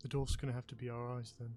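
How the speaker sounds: stage whisper, loud enough to carry. Speaking in character during a tabletop game scene: hushed voice. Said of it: "in a hushed voice".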